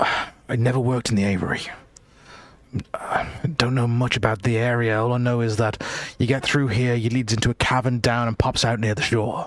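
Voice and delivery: nervous put-on character voice. Voicing a character who answers a question about rope, nervous Keller voice. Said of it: "he's looking very, very nervous".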